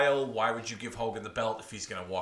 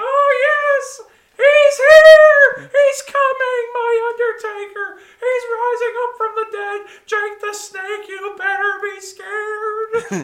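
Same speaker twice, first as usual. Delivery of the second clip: put-on excited manager voice, higher and louder; 13 dB louder than usual. Acting out a wrestling manager at ringside: Paul Bearer impression. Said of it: "'cause Paul Bearer's gonna".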